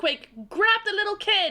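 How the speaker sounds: very high-pitched shouting. Shouting in character to an ally named Quake mid-fight: shouting an order in character. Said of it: "I shouted".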